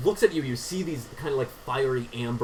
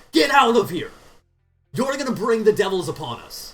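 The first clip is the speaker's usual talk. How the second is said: high, hostile yelling shout; 9 semitones higher, 7 dB louder than usual. Describing what people on the street shout at Crusaders; retelling their shout. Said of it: "they shout at Crusaders when they see them".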